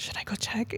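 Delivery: very quiet, hushed whisper under the breath. Retelling asking a girlfriend at night whether to check: retelling a whisper. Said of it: "whispered to her".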